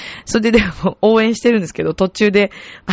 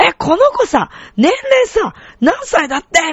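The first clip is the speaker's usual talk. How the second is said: put-on loud, high, slow, carrying young woman's voice; 9 semitones higher than usual. Retelling a woman at a match asking friends the child's age: imitating a loud voice. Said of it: "大きい声で".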